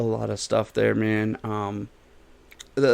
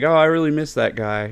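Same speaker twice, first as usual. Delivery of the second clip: normal talking voice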